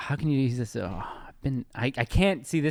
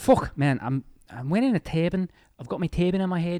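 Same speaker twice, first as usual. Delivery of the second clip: put-on Liverpool accent, higher pitch; 4 semitones higher than usual. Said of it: "let me do Liverpool first".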